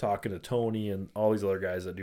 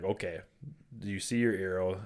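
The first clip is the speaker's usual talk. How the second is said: ordinary talk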